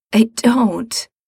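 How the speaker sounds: rasping tone. Narrator reads shivering Mikey answering Gerard from his bed, rasping. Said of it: "Mikey rasps".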